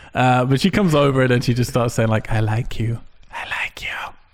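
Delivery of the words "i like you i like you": slow, airy, wispy little whispered voice. Recounting a woman approaching in a bar, speaker imitates her wispy voice. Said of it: "In like a wispy way".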